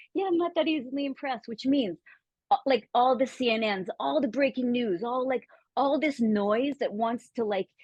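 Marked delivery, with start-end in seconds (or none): 0.1-1.4 mock casual, unbothered, offhand nonchalant, pitched up. Retelling a man's reply about his heart rate: imitating a nonchalant remark. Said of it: "the way he said it so nonchalantly".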